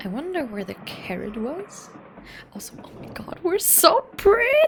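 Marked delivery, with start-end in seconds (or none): 2.8-4.5 very high, loud voice breaking up. Excited about a new game's character design, the speaker exclaims: voice cracking. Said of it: "sorry, voice crack".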